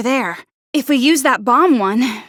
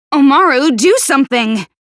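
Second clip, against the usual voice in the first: yelling, louder; 4 dB louder than usual. Character urges Omaru to do something; yelling. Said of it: "Why are you yelling?".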